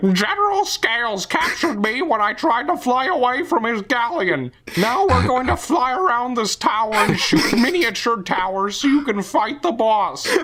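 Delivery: very high, cartoonish, silly video-game character voice. Playing Star Fox Adventures, speaker voices a game character, silly game character voice. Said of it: "single-handedly voice act a remake".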